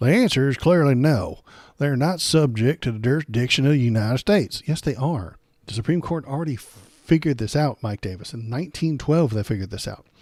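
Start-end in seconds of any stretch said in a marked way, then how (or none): 0.0-4.6 loud put-on Southern accent. Reading a quoted legal argument aloud to mock it: mock southern accent. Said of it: "continue to read this with a, a Southern accent".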